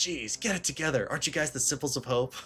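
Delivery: irritated, exasperated tone with open annoyance. Quoting a game character from chapter four: Nagito impression. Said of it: "chapter four when he's like".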